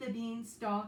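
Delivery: plain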